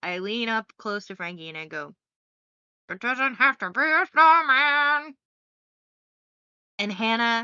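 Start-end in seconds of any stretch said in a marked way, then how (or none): 2.9-5.2 expressive, lilting cadence, a bit louder. Retelling leaning close to Frankie during a reading: imitating Anna's expressive voice. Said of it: "give any cadence to my voice".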